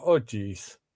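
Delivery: put-on oh jeez said with a Wisconsin-style accent. Repeating own exclamation over a card mistake: Wisconsin accent. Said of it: "now I sound like I'm from Wisconsin".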